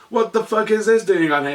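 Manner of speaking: put-on sudden, high, loud freaked-out blurt. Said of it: "I freaked out and was like".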